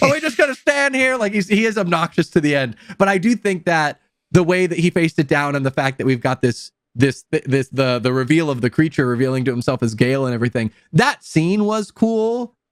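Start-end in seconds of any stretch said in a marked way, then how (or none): 0.0-1.2 high-pitched mock shout. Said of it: "like, shouting".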